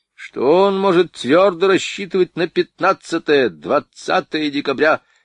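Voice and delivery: mocking sneer. Fok replies to the other party's demand, mockingly. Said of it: "насмешливо ответил Фок".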